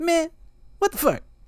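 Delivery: very high pitch, punchy comic cadence, steady rhythm. Asked how Kevin Hart sounds, imitating Kevin Hart. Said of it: "it's just that on repeat is".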